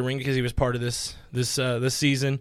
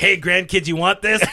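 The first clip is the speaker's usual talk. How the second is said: put-on angry old man voice, higher and louder; 6 semitones higher, 8 dB louder than usual. Imitating someone as an angry old man refusing grandkids: imitating Vinny as an angry old man. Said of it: "an angry old man".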